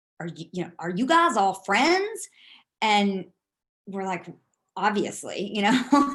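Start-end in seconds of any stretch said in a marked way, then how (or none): 0.2-2.3 put-on thick Southern accent. Retelling what a man from Alabama asked on the bus, thick Southern accent. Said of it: "thick Southern accent".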